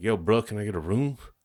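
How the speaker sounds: pushy, aggressive, impatient twang. Describing a guy walking up to the counter, the speaker imitates his aggressive, impatient twang. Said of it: "Sounds a little aggressive too, like impatient".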